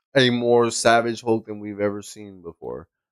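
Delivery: ordinary delivery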